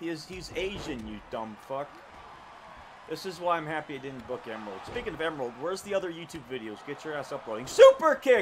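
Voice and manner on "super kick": voice breaking, cracking and pitching up on the yell. Calling out the name of a move, voice cracking. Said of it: "My voice cracked".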